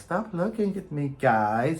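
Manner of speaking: mock very calm, even, slow delivery. Imitating a headless ghost woman prop's phrases: imitating a calm voice. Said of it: "in this very calm kind of".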